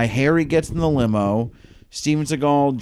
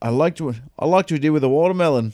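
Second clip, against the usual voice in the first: put-on British accent, higher; 4 semitones higher than usual. Retelling what a movie character said about the watermelon: imitating a british accent. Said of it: "it was a British accent".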